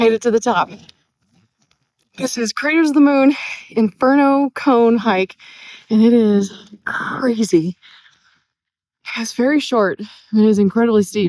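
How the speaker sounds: panting, out of breath, breathing hard. Just reached the top of a short, steep hike, speaking while panting. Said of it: "Sorry, I'm panting".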